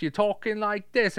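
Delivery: very high-pitched, bad put-on British accent. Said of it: "you try to do a British accent".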